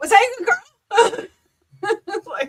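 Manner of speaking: high, loud squeal through laughter.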